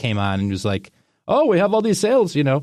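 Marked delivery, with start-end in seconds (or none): 1.3-2.6 very high put-on subcontinental Indian accent. Retelling a guy in a reservation shop's radio ad, in a subcontinental Indian accent. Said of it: "a subcontinental Indian accent".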